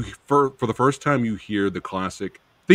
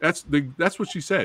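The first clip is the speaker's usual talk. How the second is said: normal talking voice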